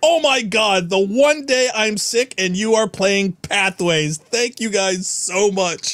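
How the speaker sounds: light, mild token yell. Streamer reads a viewer's chat message aloud, reading out a screamed message. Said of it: "He's screaming".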